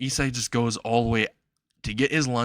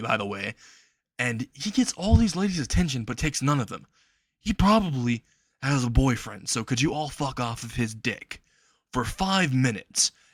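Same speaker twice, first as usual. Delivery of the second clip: ordinary delivery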